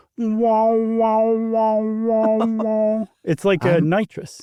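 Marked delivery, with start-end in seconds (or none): 0.2-3.1 very slow, high, stretched-out beast cry, "wow" drawn out. Asked if he does a Chewbacca, the speaker shows his: Chewbacca impression. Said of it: "my Chewbacca sounds like this".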